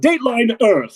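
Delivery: put-on high-pitched old-time forties radio announcer voice. Delivering a news headline when asked to: 1940s announcer voice. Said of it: "deliver the headline as if you were, like, a forties announcer".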